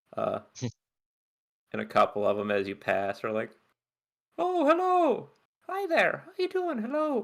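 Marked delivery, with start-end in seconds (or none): 4.3-7.2 put-on very high-pitched voice with a vague, loose Irish accent. Voicing ones who greet you as you pass on the pathways, vaguely irish accent. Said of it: "Vaguely Irish accent".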